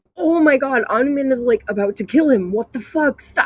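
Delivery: put-on, frantic, high-pitched, panicked screaming. Retelling watching a violent scene: retelling screaming at a screen. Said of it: "screaming at the monitor".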